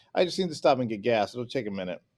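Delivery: ordinary delivery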